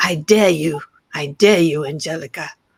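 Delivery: loud put-on British accent. Retelling how someone dared the speaker to finish a book: imitating a British accent. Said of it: "he has a British accent".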